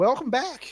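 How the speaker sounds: voice cracks up very high and loud. Voicing a young woman's greeting, voice cracking. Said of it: "my voice cracked up".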